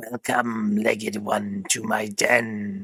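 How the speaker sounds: sibilant, hissing female voice, "den" drawn out. Narrating an adventure, voicing a figure welcoming the reader, sibilant female voice. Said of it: "a sibilant female voice".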